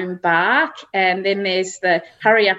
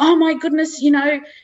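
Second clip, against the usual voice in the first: cranky, complaining voice. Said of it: "getting really cranky with Hamish and going".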